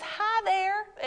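put-on Southern-accented voice. Reading a viewer's chat greeting aloud: Pastor Nicole's southern accent. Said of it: "in her southern accent that she has".

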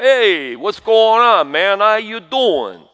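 put-on slow, drawn-out New York Italian accent. Describing how guys he grew up with in New York talked: Rocky Balboa New York accent. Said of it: "they talk like that".

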